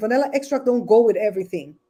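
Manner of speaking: usual speaking voice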